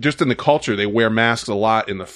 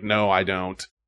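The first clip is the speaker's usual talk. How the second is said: sarcastic, smug, offhand, dismissive tone; 3 semitones lower, 4 dB quieter than usual. Retelling how he answered a question on responsibility: imitating a smirking dismissal. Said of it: "smirked it off and was like".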